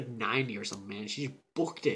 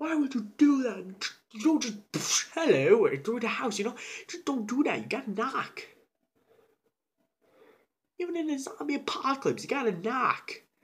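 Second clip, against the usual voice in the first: high, loud, frantic freaked-out rant. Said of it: "And he's freaking out".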